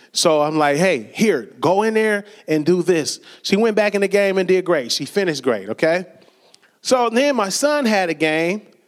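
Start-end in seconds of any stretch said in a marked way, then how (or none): none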